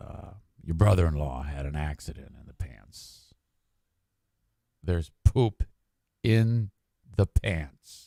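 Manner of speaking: level, flat, toneless monotone. Retelling how the tailor broke the news about the pants, imitating the tailor's monotone. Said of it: "he's real monotone. He goes".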